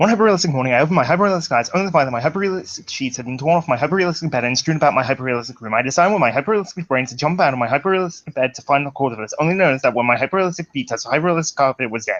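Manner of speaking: reading at top speed, rapid-fire. Speaker times their own reading on a phone: very fast speed reading. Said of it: "the speed read from hell".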